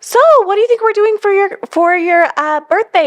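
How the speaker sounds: subtle, casual, high-pitched tone. Retelling a hint about a son's birthday: imitating own high-pitched voice. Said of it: "Your voice gets high".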